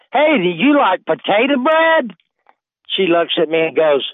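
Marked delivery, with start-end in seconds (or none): 0.2-2.2 enthusiastic, eager, pitched-up voice. Retelling offering bread to a sister: imitating own enthusiastic offer. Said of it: "I said real enthusiastic".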